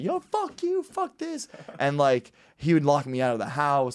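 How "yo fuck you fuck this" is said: play-acted very high, drawn-out wailing scream through tears. Recalling the brother's throwing drills that ended in tears, imitating own past screaming. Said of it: "until I was just screaming".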